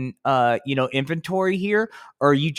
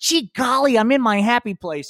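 goofy puppet voice, pitched up high; 8 semitones higher than usual. Answering as Spanky after being told he can wave freely, Spanky's voice. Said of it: "Hey, Spanky".

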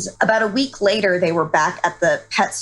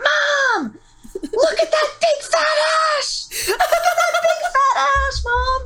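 put-on play-acted very high, excited child's scream, word drawn out. Retelling what the nephew screamed to his mom, retelling a nephew's scream. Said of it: "just screams like".

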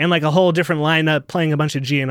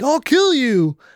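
menacing, threatening tone, pitched up; 9 semitones higher than usual. Telling how a man ran after someone, acting out a threat. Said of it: "threatening like".

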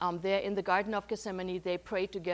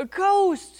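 very high, very loud, shrill cry of terror; 12 semitones higher, 12 dB louder than usual. Storyteller voices frightened men seeing a figure walk on the water, crying out in terror. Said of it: "They cried out in terror".

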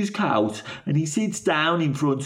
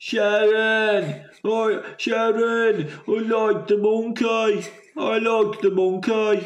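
slow, pitched-up croaky Brummie, drawn-out words; 5 semitones higher than usual. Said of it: "Is it like that?".

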